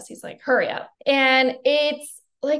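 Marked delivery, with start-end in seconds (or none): none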